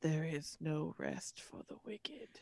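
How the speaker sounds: soft, hushed, near-silent whisper. Voicing a man who speaks as the party leaves: whispering. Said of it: "You hear him whisper".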